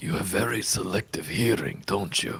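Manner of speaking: quiet, hushed whisper. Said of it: "I'm supposed to be whispering right now".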